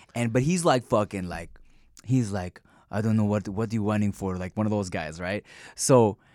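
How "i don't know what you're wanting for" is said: put-on Eastern European accent, much lower pitch. Telling a story about a man, imitating an eastern european accent. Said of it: "Eastern European accent".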